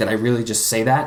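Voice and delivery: ordinary talk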